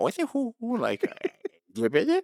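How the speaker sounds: goofy, very high voice swooping up and down. Showing the goofy side of an impression: goofy Adam Sandler impression. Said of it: "Adam Sandler's fun 'cause you can do, like, the goofy".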